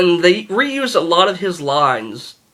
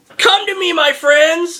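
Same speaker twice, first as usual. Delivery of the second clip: mock shrill, very high screaming; 12 semitones higher than usual. Retelling how the villain calls his dogs, imitating Loki screaming.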